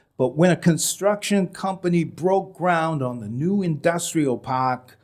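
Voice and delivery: r-dropping Massachusetts dialect.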